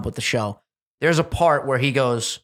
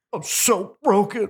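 phony, put-on, pitched-up crying; 8 semitones higher than usual. Imitating a show contestant's crying that doesn't look real: imitating fake crying. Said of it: "Just like that".

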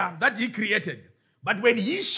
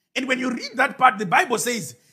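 usual speaking voice

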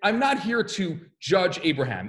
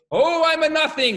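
loud, high, fervent, excited shout at full force; 9 semitones higher, 5 dB louder than usual. Retelling a young student joining the others: imitating passionate excited shouting. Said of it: "with all his passion and might and excitement".

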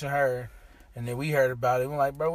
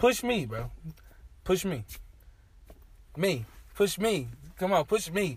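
put-on calm, goading, taunting tone; 3 semitones higher, 3 dB quieter than usual. Retelling confronting a guy who pushed a girl, retelling a calm taunt. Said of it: "I'm standing there calm".

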